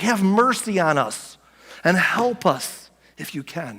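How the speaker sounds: acted-out desperate, begging tone. Retelling the man's plea to Jesus, acting out a desperate plea. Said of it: "Can you hear the desperation in his voice?".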